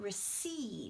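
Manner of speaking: receive with stress on the second syllable, ceive. Reviewing the verb stress rule, saying receive with stress on ceive. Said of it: "stress comes on the second part".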